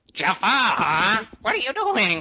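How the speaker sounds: horrible, drawn-out character voice, loud and slow. Joking about a video game with others: horrible Iago impersonation. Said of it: "that's a horrible impersonation of, uh, Iago".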